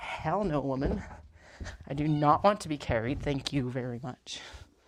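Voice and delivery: slow, deliberate cat voice. Trying to bring the cat downstairs, voicing the cat's reply. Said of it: "She's like".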